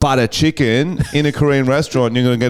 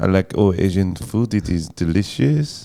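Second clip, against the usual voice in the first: fake, put-on French accent; 6 semitones lower, 3 dB quieter than usual. Asked which accent would sound good, the speaker answers in a French accent.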